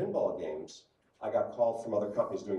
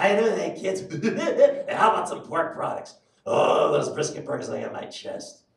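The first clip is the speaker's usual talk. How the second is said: loud, high, pitched-up cartoon clown voice; 8 semitones higher, 6 dB louder than usual. Voice actor demonstrating the characters he voices, in the Krusty voice. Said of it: "Like Krusty".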